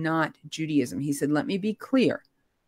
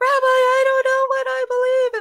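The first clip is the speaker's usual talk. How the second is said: very high-pitched, raised emotional outburst; 6 dB louder than usual. Recalling speaking to the rabbi, reenacting an emotional moment. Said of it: "in that moment of emotionality".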